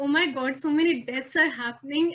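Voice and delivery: ordinary talk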